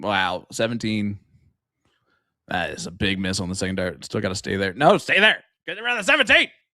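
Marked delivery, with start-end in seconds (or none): 4.7-6.4 very high-pitched, urgent, pleading shout. Commentator watching a darts match, yelling. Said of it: "I'm also yelling now".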